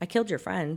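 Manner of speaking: blank, flat, expressionless deadpan delivery. Retelling what a driver said to his passenger: imitating an emotionless delivery. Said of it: "blank, emotionless face".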